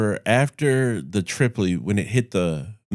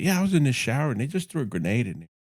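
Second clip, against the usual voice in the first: play-acted offhand, unbothered, calm, matter-of-fact delivery; 4 semitones higher, 4 dB quieter than usual. Retelling the stories your dad told you, imitating his calm telling. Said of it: "You just said that so calmly".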